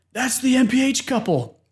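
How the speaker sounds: excited shout, pitched high.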